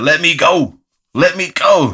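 put-on acted small child's yell. Retelling how security carried a flailing man out of the club, imitating a yelling four-year-old.

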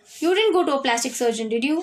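ordinary delivery

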